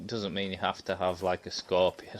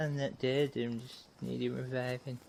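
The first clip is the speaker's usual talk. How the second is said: high, soft, fussy pedantic voice; 5 semitones higher, 6 dB quieter than usual. While gaming, the speaker repeats the other player's earlier words: mimicking the other player. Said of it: "That's a perfect impression".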